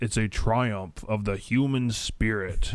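epic movie-trailer narrator voice. Describing a 1998 movie to another speaker, in movie trailer voice. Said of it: "in the movie trailer voice".

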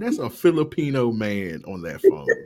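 ordinary talk

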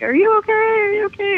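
mock yelling. Retelling how he ran back to her, imitating him yelling. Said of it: "he's like yelling like".

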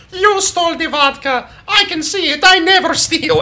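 put-on high little kid voice, yelling.

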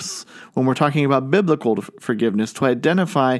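ordinary delivery

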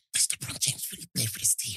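hushed whisper. Retelling what she asked during a film in the cinema, whispering. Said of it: "she starts whispering".

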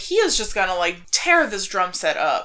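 usual speaking voice

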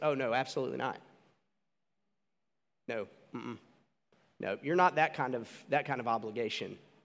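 put-on deadpan delivery. Retelling a scene, the speaker quotes a man's reply to a woman, imitating a deadpan reply. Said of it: "and it's real deadpan".

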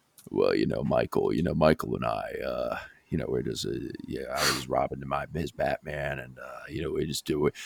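very deep, rough yet soft baritone growl. Imitating an athlete's phenomenally low voice: Scottie Pippen impression, low growl. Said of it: "like that, but, like, an actual baritone growl".

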